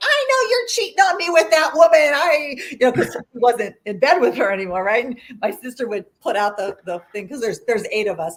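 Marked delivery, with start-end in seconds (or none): 0.0-2.1 very high-pitched, shrill raised-voice outburst. Retelling how mother yelled at father about cheating: imitating mother yelling. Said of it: "start yelling at him".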